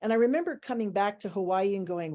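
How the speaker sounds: ordinary talk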